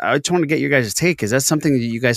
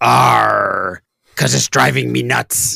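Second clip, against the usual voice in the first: put-on pirate voice, slower; 4 dB louder than usual. Telling a bar joke, doing the pirate's punchline in a pirate voice. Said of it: "He's got to be a pirate".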